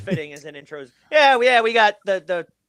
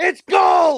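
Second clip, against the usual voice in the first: very high, hyped-up, put-on Old West prospector whoop; 11 semitones higher, 3 dB louder than usual. Retelling a promo where Billy kept yelling: imitating Billy yelling gold. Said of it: "He's just yelling gold".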